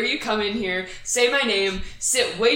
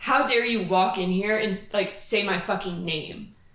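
mock angry, pissed-off delivery. Retelling what they said to the defense attorney: imitating a pissed-off retort. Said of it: "I was pissed off".

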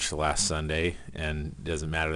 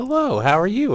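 very high, cheery, jovial tone; 11 dB louder than usual. Retelling a phone call, the speaker imitates Sherry answering, imitating Sherry's jovial phone voice. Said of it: "answers the phone with a jovial voice".

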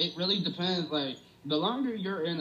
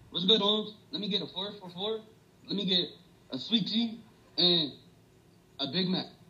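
put-on Mexican-accented English, casual; 3 semitones higher than usual. Showing off an accent, the speaker improvises ordering food: Mexican accent. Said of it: "That sounds Mexican for real".

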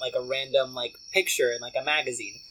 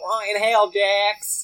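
put-on Southern accent, pitched higher; 7 semitones higher than usual. Quoting names as a go-to impression: Britney from VPR voice. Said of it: "Britney from V P R".

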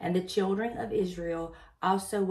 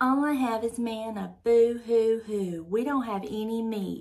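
put-on bratty, sulky, childish whine; 4 semitones higher, 4 dB louder than usual. A speaker acts out the listener's children throwing a fit, mock whining tone. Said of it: "hear this in a whining tone".

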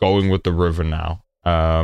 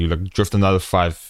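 plain

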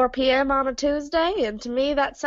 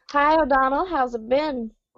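normal talking voice

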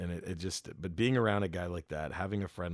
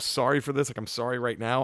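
mock sobbing, crying and bawling; 5 semitones higher than usual. Retelling breaking down in tears on stage: retelling own bawling. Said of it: "I was really bawling".

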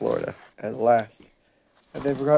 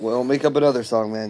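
usual speaking voice

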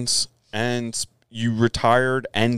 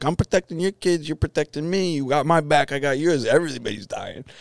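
put-on New York street-talk accent; 4 semitones higher than usual. Retelling what a friend said about his new town: imitating Sal's New York accent. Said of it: "I'm gonna fuck his accent up".

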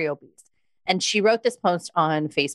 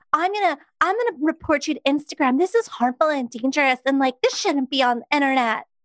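mock, very high, shrill, outraged, scandalized caricature; 10 semitones higher than usual. Speaker mocks an offended person threatening to report them, in a mocking Becky caricature voice. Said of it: "That was legit an outstanding voice".

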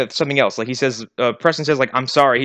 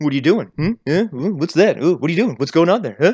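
prying, nosy, mocking voice. Retelling a film scene, playing Taye Diggs' character: smirking, prying coworker voice. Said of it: "he's the shitty coworker who's like".

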